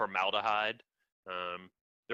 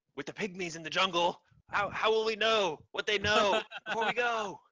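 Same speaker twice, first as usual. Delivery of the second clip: very high, eager, excited chatter; 11 semitones higher than usual. Voicing an explorer in a safari hat waving his arms: excited, animated explorer voice. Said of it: "he's waving his arms excitedly".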